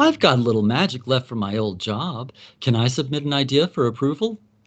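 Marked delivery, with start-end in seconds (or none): none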